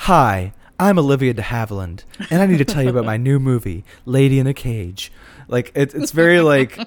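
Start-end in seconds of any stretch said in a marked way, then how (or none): 0.0-5.1 stiffly polite, prim, proper, poised, reserved, distant. Quoting a film trailer introduction: Olivia de Havilland prim proper voice. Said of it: "that same sort of prim and proper distance".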